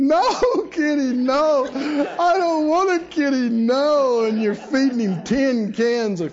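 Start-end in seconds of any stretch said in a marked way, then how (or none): 0.0-4.2 very slow, high, tearful pleading with long "no"s. Acting out someone with a twenty-pound cat on their chest: mock crying. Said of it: "you can be crying, going".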